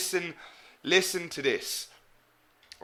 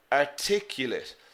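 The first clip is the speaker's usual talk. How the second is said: adjective "articulate" with stress on the second syllable. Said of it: "the stress is here in the second syllable".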